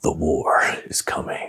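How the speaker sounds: whispered, slow, breathy epic movie-trailer narrator voice. Recalling having to deliver lines he never expected to say, in trailer voice. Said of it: "that trailer voice".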